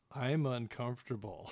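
put-on dry deadpan delivery. Quoting another person's comment from earlier, retelling a deadpan line. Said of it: "she just kind of deadpans out".

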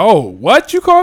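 put-on, loud, affronted, offended American accent. Imitating an american reacting to being insulted: imitating an offended american. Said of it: "American accent".

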